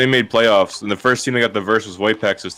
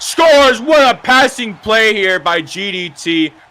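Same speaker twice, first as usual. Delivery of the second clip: drawn-out, very high commentator-style scream; 13 semitones higher, 5 dB louder than usual. Calling a scoring play in a game: screaming a goal call. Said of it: "I don't know why I'm screaming".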